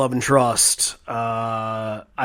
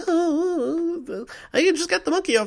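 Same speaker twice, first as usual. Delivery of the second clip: very high, squeaky voice with a drawn-out oh. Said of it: "your [name] impersonation".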